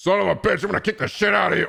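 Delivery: very high, pushed-up, rough brawler voice. Talking about dubbing game characters, the speaker brings out a Kiryu voice. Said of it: "I'll come out my Kiryu voice".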